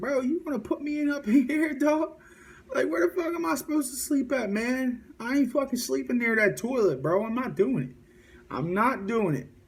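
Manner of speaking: mock very high, fed-up, outraged, furious ranting complaint. Retelling complaining to an officer about sleeping near the toilet: imitating own angry complaint. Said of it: "mad as shit".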